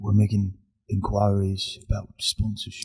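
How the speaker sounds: quiet, hushed, deadly serious voice. Joking about finding sponsors for their podcast: Thomas Shelby voice. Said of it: "doing that voice".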